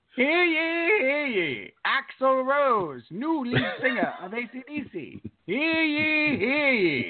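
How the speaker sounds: put-on high old English town crier call, drawn-out "ye". Playing the house crier announcing the day's top stories, in an old english town crier voice. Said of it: "read the top stories of the day in an old English dialect".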